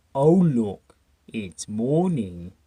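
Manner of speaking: dropped, deep, slow, drawn-out voice. Describing a small blue-haired character and quoting him: deep voice. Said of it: "this deep voice".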